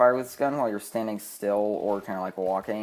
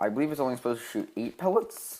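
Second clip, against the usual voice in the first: breaking voice, cracking in the middle; 3 semitones higher than usual. Explaining a possible game glitch, voice cracking. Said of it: "voice crack".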